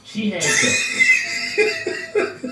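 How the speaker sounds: bursting out laughing.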